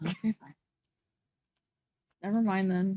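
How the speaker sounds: sounding defeated. Giving up on a question the other player can't answer, sounding defeated. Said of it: "You sound so defeated".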